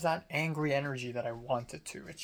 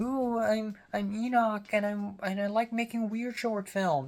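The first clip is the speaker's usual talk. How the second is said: mocking, high, teasing parody voice; 6 semitones higher than usual. Retelling how a friend impersonated the speaker: imitating a friend's mocking impression. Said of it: "she impersonates me".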